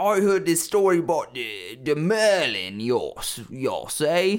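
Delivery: put-on rustic British accent. Improvising a peasant retelling the merlin tale, in a mock british peasant accent. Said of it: "British peasants".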